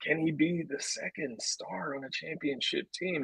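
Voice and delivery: hushed, very quiet, under-the-breath whisper. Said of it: "I'm whispering it".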